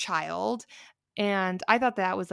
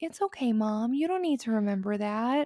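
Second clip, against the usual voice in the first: put-on childlike voice with a patronizing, talking-down tone; 3 semitones higher than usual. Acting out people telling a parent not to remember: imitating a patronizing tone. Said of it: "that kind of tone that I was using".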